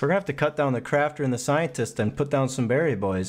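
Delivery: ordinary talk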